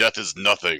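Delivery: booming, loud, resounding, commanding voice. In a role-play game, a player's character steps into a crowd: booming voice. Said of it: "with a booming voice".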